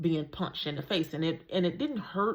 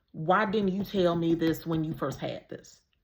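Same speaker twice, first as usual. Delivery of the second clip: imitated urgent tone. Retelling a friend's question on the phone: imitating an urgent tone. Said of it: "saying it with a sense of urgency".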